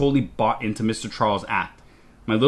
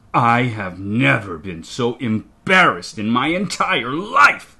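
hissing through gritted teeth, much slower; 4 dB louder than usual. Narrator reading an enraged parent's line to their child, hissing through gritted teeth. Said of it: "he hisses through gritted teeth".

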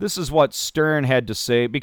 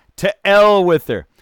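poor, loud, fake Scottish accent; 7 semitones higher, 7 dB louder than usual. Joking about how to say a name, trying out a bad Scottish accent. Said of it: "if I was Scottish, that's what it would sound like".

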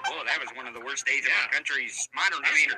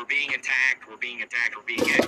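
ordinary delivery

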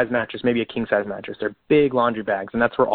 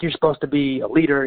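mock yelling, toned down to restrained bark; 3 semitones higher than usual. Retelling a petty officer catching the speaker napping: imitating someone yelling. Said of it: "yelling at me".

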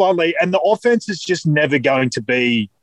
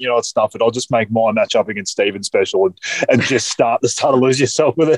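ordinary talk, nothing marked

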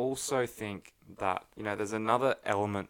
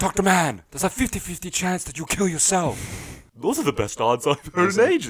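odd put-on voice, high and loud; 9 semitones higher, 6 dB louder than usual. Recapping a movie scene, speaker acts out the dialogue: put-on character voice. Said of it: "What was that voice?".

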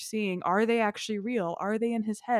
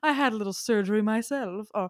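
put-on very strong, laid-on French accent. Quoting a film character who is an angel, in a very French accent. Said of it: "he's saying it in this like very French accent".

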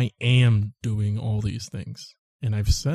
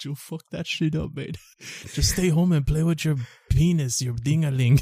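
high, stern put-on Mexican accent; 5 semitones higher than usual. Acting out someone scolding their mijo: Mexican accent impression. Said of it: "I'm doing Mexican".

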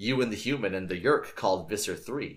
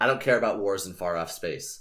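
plain reading voice

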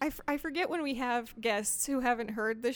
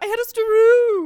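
shrill, very high, loud cartoon character voice; 10 semitones higher, 16 dB louder than usual. Show your co-speaker which guy you turn into, in a guy from The Simpsons voice. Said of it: "the guy who's like".

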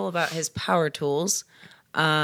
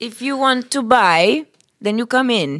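dumb fake Italian accent, loud, pitched up; 5 semitones higher, 6 dB louder than usual. Acting out a phone menu message in a put-on Italian accent. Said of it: "we're doing two styles of Italian here".

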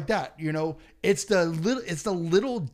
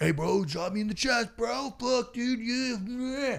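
put-on, pitched-up drunken party-guy voice; 6 semitones higher, 3 dB quieter than usual. Retelling drunk people at after parties asking for a chest chop: imitating a drunk partygoer. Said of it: "people get drunk".

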